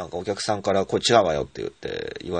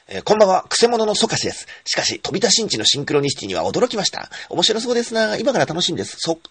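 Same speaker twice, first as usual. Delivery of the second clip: rapid-fire reading, very high pitched and loud; 14 semitones higher, 6 dB louder than usual. Reading a written sentence aloud as fast talk: read very quickly. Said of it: "今度はじゃあ早口で読んでみましょうかね".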